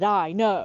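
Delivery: put-on, very abrupt, curt delivery. Retelling how he answered when confronted about not meeting: imitating a very abrupt reply. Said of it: "his tone and the way he abruptly turned and said".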